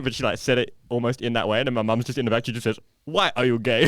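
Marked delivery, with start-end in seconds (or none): 3.1-3.9 loud, blunt, blurted straight out. Retelling a car ride where mum speaks from the back seat: imitating mum blurting it out loudly. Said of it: "she just lets it rip".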